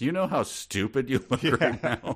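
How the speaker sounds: dry, sarcastic put-down in a high, snarky cat voice. Imagining what a watching cat would say: sarcastic cat voice. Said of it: "saying sarcastic things like".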